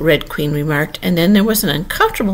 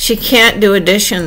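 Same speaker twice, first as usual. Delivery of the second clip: plain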